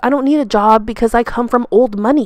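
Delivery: ordinary delivery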